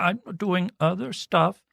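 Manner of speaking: put-on soft little-boy voice. Retelling Asuelu's waffling answer to Kalani about helping, do a soft-spoken Asuelu impression. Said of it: "He has such a soft-spoken, shitty little boy voice".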